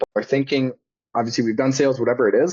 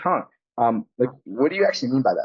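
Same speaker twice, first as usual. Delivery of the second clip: confused, halting, puzzled and unsure tone. Reenacting her own past reaction to someone's statements, acting confused. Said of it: "when we come in with that confused tonality".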